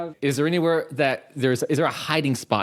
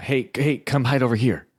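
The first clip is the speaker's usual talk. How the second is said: hushed whisper; 3 semitones lower than usual. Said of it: "whisper to him".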